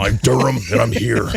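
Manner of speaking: put-on tough hero voice. Imagining how Durham should sound: Durham in a Batman-like voice. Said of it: "if he did speak like that".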